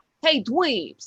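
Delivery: cartoon dog character voice. Describing a cartoon character and imitating his voice: imitating Rude Dog's voice. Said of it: "his voice is like".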